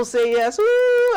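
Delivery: loud, high-pitched cheer.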